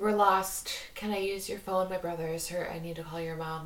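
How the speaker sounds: flat monotone imitation. Speaker acts out what these visitors say when asking in, imitating a monotone voice. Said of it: "like in a, a monotone voice".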